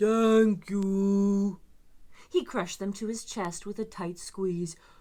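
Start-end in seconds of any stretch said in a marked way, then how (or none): 0.0-1.6 big booming monster voice, "you" drawn out long. Reading a picture book aloud, the monster's first words: deep booming voice. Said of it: "in a deep, booming voice".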